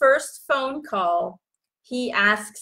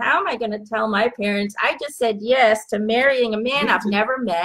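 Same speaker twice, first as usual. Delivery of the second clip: plain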